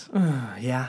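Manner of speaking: not sounding excited. Answering whether excited enough to give the synopsis, unexcited flat answer. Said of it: "that didn't sound so excited".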